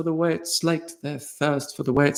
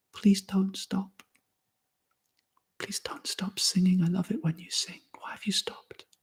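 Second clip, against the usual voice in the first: very quiet, tiny, faint voice; 3 semitones higher, 12 dB quieter than usual. Reading a story aloud, as a voice only a few can hear: very, very quiet voice. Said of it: "the voice says very, very quietly".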